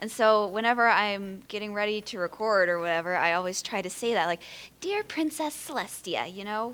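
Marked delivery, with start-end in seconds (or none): 4.8-6.3 terrible high, swoopy sing-song voice. Showing the catchphrase said before recording: terrible Twilight Sparkle impression. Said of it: "That was a terrible impression".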